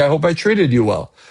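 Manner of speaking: ordinary talk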